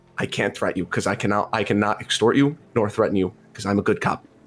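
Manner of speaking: whispering out the side of the beak. Playing a character leaning in to threaten a captive mage: whispering out the side of the beak. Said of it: "whisper out the side of it".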